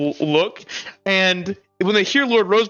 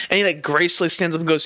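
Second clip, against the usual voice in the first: plain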